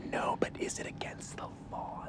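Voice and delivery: soft, hushed whisper.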